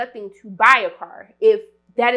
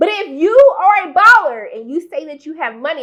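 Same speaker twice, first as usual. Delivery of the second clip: raised, emphatic, projected voice; 5 semitones higher, 5 dB louder than usual. Speaker addressing the audience, repeating a point for the people in the back: raised voice. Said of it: "I see I'm raising my voice".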